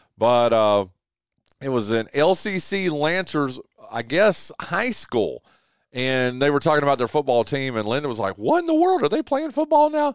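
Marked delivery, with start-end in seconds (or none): 8.4-10.1 put-on voice, very high, quick and rattled. Retelling someone's reaction to a high school football team, Linda impression. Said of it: "That's my impression of Linda's voice".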